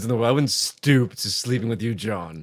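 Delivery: put-on devil voice. Speaker showing off his Satan voice, talking to John; Satan voice. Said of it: "This is my Satan voice".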